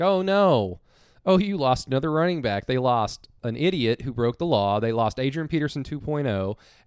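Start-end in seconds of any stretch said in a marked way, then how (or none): 0.0-2.6 high, slightly sarcastic, put-on dismay. Retelling own sarcastic reply to a tweet: retelling own sarcastic remark. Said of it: "in my little sarcastic".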